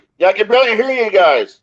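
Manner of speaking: high-pitched yelling. A guest on a call who can barely hear the hosts, yelling. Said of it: "it sounds like you're yelling".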